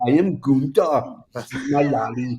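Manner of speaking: put-on German accent, big fat kid voice. Joking about a wrestler's name, voicing a big fat German kid voice. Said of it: "sounds like a big fat German kid who's eating".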